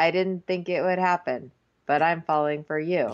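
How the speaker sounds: flat, mechanical robot-like monotone. Retelling what Daniel said when he started sounding like a robot, imitating a robotic voice. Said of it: "he just starts sounding like a robot".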